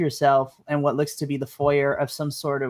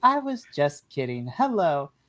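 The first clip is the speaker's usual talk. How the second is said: put-on robotic camcorder voice; 3 dB quieter than usual. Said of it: "you have this voice, and then it goes back to".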